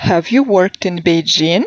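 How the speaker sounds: rising pitch at the end on "Beijing". Intonation lesson, saying a yes-no question with rising intonation.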